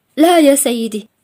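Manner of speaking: hoarse, rasping, rattling, roughened voice. Reading a story aloud, a character answers after fighting back tears: hoarse voice. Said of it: "وقالت أخيرًا بصوت متحشرج".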